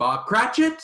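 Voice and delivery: shrill, high, very loud shouted character voice. Scrooge, now a changed man, knocks on Bob Cratchit's door; call out in a Scrooge voice. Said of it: "in his Scrooge voice".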